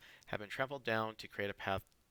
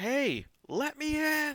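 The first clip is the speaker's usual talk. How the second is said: very high, very loud, slow, drawn-out yell; 9 dB louder than usual. Voicing a character yelling to his sister outside a barred house: yelling to his sister. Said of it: "trying to yell to his sister".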